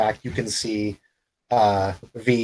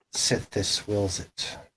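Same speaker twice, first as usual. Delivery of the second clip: whispered, very low, hushed murmur; 8 dB quieter than usual. A character gets very close to the listener and speaks in a very low tone. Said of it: "says in a very low tone".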